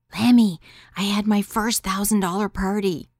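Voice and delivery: whispering. Phoning a half-asleep man after getting home, whispering. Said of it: "whispering like I was in the room with him".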